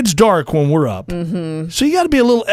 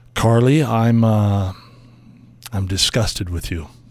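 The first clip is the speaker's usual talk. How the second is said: mock-serious, grave, very low and slow voice; 10 semitones lower, 3 dB quieter than usual. Announcing a complaint to the other speaker: mock serious voice. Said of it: "the seriousness in my voice".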